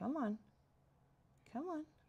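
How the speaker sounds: Minnesota accent slipping through. Getting frustrated that something won't work: Minnesota accent slipping out. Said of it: "You're making my Minnesota accent come out".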